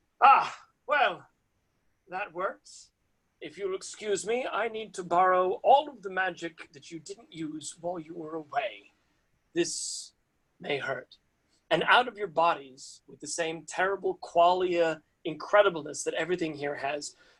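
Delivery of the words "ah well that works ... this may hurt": put-on very polite, courteous, kind elderly voice. Voicing a stranger who speaks to the players: very polite kind old voice. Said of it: "a very polite, kind old voice".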